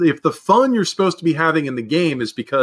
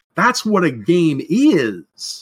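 very slow, drawn-out, complaining whiny voice; 3 semitones higher than usual. Speaker repeats a favorite saying of theirs: whiny voice. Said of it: "as I'm fond of saying in a whiny voice".

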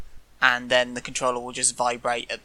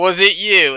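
very loud, high-pitched, stern accusing tone; 7 semitones higher, 10 dB louder than usual. Imitating a game player questioning others: stern accusing voice. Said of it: "Did you say it in that voice?".

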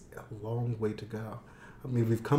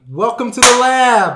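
shouting, higher and louder; 13 semitones higher, 18 dB louder than usual. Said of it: "Why do you need to yell".

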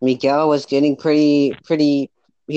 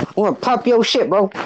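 put-on threatening voice, much higher pitch; 7 semitones higher than usual. Acting out how a man with a Glock threatened the speaker, imitating Miguel's threat. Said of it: "Did he say it like that?".

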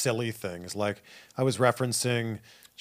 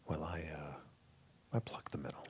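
very soft, breathy, slow, unhurried radio-host murmur; 7 semitones lower, 18 dB quieter than usual. Playing along with a pretend radio show: mock NPR host voice. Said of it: "the N P R style is, it's slow".

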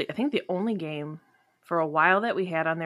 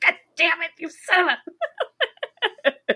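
very high, shrill, pissed-off furious outburst; 11 semitones higher, 5 dB louder than usual. Retelling how dad reacted when he couldn't figure out the game: imitating someone getting pissed. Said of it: "'cause he's getting so pissed".

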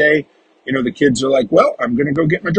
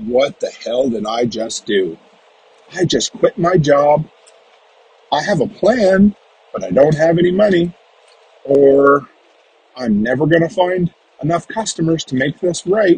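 ordinary talk

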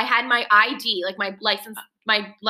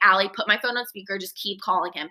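ordinary talk

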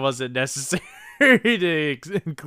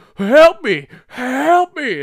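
mock panicked pleading, higher and louder; 10 semitones higher, 8 dB louder than usual. Retelling a scene where a kid slips into a brook: imitating panicked cries for help. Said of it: "freaking the fuck out".

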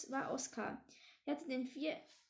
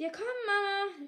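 loud, high call carrying far; 6 semitones higher, 7 dB louder than usual. Narrator reads a character calling to his mother while heading to the kitchen, calling loudly. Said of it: "rief Flüsschen laut".

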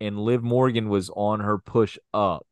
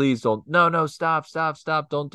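put-on begging tone, much higher pitch; 6 semitones higher than usual. Recapping a wrestling segment, imitating Liv Morgan begging. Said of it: "She was begging".

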